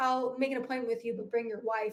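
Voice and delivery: ordinary talk, nothing marked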